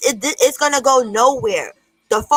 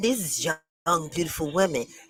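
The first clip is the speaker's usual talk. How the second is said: leering voice dripping with lust; 8 semitones lower, 9 dB quieter than usual. Mocking another speaker's words back at him: imitating a lustful voice.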